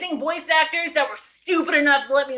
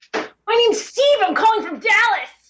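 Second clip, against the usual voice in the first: obviously fake, made-up high, loud voice; 7 semitones higher, 5 dB louder than usual. Answering a podcast call-in as steve from dallas: put-on high-pitched voice. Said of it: "your voice got really high-pitched".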